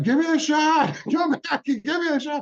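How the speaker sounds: shrill, very high, loud yelling scream. Retelling screaming out the door for a shot: imitating own screaming. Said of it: "I'm screaming out the door".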